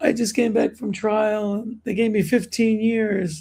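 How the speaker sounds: acted crying voice. Retelling a crying man's words in the speaker's Rikers classroom, imitating a crying man. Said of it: "this guy was crying in my classroom".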